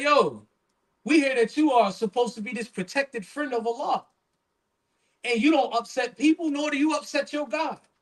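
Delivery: acted-out scoffing, disbelieving, sarcastic mocking tone. Retelling how doubters on a boat challenged a sheikh: imitating a sarcastic taunt. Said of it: "they're saying it sarcastically".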